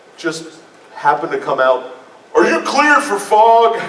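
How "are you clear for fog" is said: put-on hearty American dad voice, very high, loud. Recounting his shocked reaction to someone at the front of the room, American dad voice. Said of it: "in my best American Dad voice".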